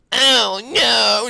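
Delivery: put-on very high, creaky, baby-like whine. Recapping a fighter getting knocked down in a clip, whiny-baby Grant Dawson impression. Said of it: "Just like a very whiny baby".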